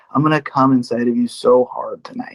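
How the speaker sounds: hushed stage whisper, just audible, meant to carry. Retelling what he whispered in her ear at the shop: imitating a whisper. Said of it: "he whispers in her ear".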